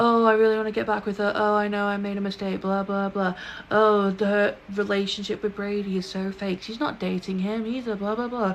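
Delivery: put-on whiny kid voice. Mocking a book character's narration: mock-whining like a child. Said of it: "He was whining like such a child".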